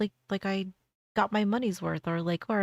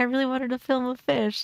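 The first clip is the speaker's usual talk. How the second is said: mock all-excited, eager, pitched-up gush; 5 semitones higher than usual. Retelling what someone said about filming a fish: imitating excited speech. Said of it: "he's all excited, and he was like".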